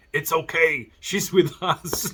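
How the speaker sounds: high, drawn-out shouting yell. Retelling a film scene where a character yells to the passengers: imitating someone yelling. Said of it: "he's yelling".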